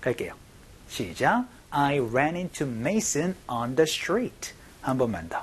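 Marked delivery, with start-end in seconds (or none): 1.7-4.5 slow, deliberate read-through. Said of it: "연습 한번 해보도록 하죠".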